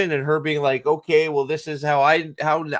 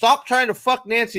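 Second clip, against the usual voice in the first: furious, snapping outburst, pitched up; 8 semitones higher than usual. Retelling a show scene where one character snaps at another: imitating an angry outburst. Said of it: "goes off the fucking deep end going".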